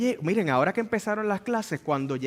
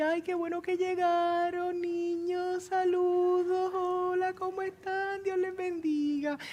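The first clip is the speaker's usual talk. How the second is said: very high, dulcet, sugary sweet little voice; 13 semitones higher than usual. Imitating a teacher greeting the arriving children, in a sweet little voice. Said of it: "tiene una vocecita bien dulce".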